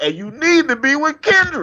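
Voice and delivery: very high, rising yell. Telling a wedding story, quoting the mom who yelled out, retelling a mother's yell. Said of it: "the mom yelled out".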